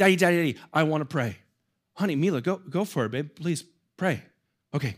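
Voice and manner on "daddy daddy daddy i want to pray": put-on insistent child voice calling out. A father acting out his 5-year-old daughter at evening prayer; imitating Mila, a small child. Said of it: "my 5-year-old daughter's prayer sounds like this".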